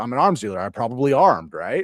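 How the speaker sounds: normal talking voice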